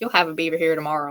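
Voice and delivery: put-on slight Southern Tennessee accent. Retelling what her instructor told her about the beaver snare, Doug McKenzie's Tennessee accent. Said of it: "in his little Tennessee accent".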